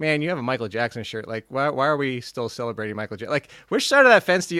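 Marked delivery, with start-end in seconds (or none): none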